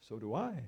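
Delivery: imitated German accent. Retelling what a professor asked in the law library: imitating a German accent. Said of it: "kind of with a German, German, German accent".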